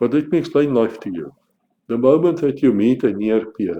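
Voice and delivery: mocking, laid-on, swooping sarcastic delivery. Lecturing people who know nothing about modern warfare, sarcastic. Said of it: "can I say that more sarcastically?".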